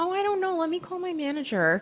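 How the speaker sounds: put-on clueless innocent voice. Retelling a Golden Girls scene, imitating someone playing dumb. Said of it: "she's playing dumb".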